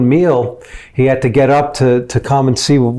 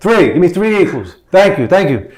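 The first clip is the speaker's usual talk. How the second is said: loud yelling, pitched high; 5 semitones higher than usual. Retelling a coffee order, yelling because the other man yells: retelling own yelling. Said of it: "Suddenly, I'm yelling because he's yelling".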